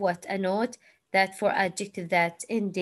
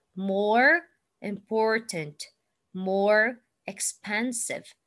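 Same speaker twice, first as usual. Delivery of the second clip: American pronunciation, the r in "more" sounded. Demonstrating pronunciation for learners, now in an american accent. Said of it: "But in American accent".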